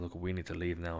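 ordinary talk, nothing marked

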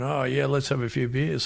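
ordinary talk, nothing marked

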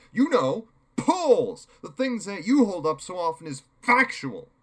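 very loud, high-pitched words spat out. During an argument about polls, [name] answers back, spat out. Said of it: "[name] spat".

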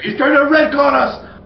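yelling out. In a role-play game, a player screams in character: screaming. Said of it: "And I'll scream".

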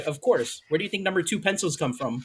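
ordinary talk

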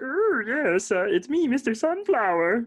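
very high, drawn-out, stretched-out character voice. Voicing the bugbear flower seller Sunflower: Sunflower voice, sounds like Yoda. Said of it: "he kinda sounds like Yoda".

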